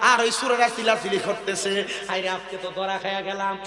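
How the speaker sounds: normal talking voice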